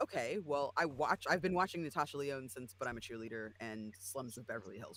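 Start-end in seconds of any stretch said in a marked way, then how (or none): none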